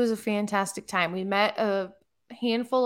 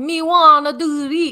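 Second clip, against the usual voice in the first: loud, slow, drawn-out put-on Jamaican accent; 6 semitones higher, 10 dB louder than usual. Telling how someone kept talking to the servers, quoting him in a put-on jamaican accent. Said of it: "trying to talk in a Jamaican accent".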